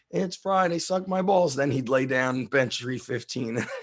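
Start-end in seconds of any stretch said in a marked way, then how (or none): 0.1-1.5 high, exasperated, fed-up shout. Recalling a man at the gym shouting before he benched: retelling a shout. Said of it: "I will never forget him shouting like".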